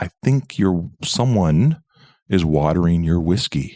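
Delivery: polite, careful, slow and tactful tone. Retelling a hotel guest telling the manager about the whiskey: imitating someone speaking quietly. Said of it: "he's saying this quietly".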